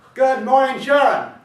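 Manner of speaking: mock roaring. Retelling how you greeted a woman in the building halls, retelling a roared greeting. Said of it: "Not only did I roar".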